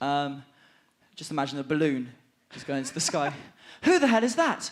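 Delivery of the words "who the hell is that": voice jumps up an octave, high and loud. An actor redelivers his well-known line from a tv role, up an octave. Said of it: "you went up an octave for the line".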